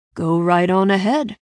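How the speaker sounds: ordinary delivery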